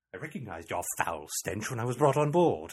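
put-on British accent, film heroine style. Reenacting the scene on board, giving Princess Leia's line a British accent. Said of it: "Princess Leia sometimes had a British accent".

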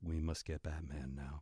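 very low, hushed, flat deadpan drone. Podcaster mocking how voice actors now deliver angry characters' lines: imitating a flat emotionless tone. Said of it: "adopt this completely flat tone".

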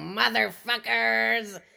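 gritty villain character voice, dragged out slow.

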